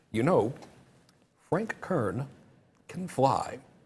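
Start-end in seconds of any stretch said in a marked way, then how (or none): 1.4-3.5 slow, precise, over-enunciated speech. Imitating Eben, who enunciates everything, Eben impression with crisp enunciation. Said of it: "I'm going to try to talk like Eben. He enunciates everything".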